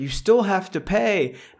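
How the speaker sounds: acted high yell. Retelling how a lady came out and yelled at him, imitating her yelling. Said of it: "the lady comes out and yells at me".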